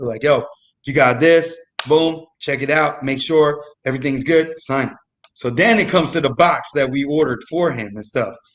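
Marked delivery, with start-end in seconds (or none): none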